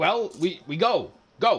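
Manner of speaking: high, very slow, halting broken Common. Voicing the tall guy answering the player: speaking broken Common. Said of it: "he says in very kind of broken common".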